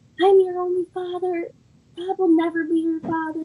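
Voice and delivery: mock angry screaming. Recounting a fight, the speaker acts out their father screaming at them: retelling an angry scream. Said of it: "he started screaming at me and saying".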